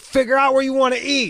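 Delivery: shouting. Retelling his own past words to his ex: imitating himself yelling.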